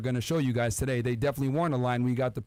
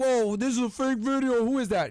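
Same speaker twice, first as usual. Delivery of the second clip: doubting, skeptical tone. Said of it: "some of you are like".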